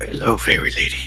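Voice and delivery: breathy, whispered superhero voice. Voicing a character in a dating game: Batman voice. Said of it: "I did Batman for this one".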